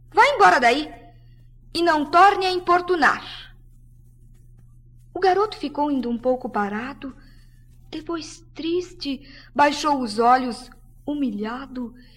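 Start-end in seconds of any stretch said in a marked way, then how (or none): 0.1-3.5 high-pitched, scornful, contemptuous brush-off. Narrator reading a story, a young woman answers a boy asking for a rose: unusual contempt. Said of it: "a jovem falou com desprezo invulgar".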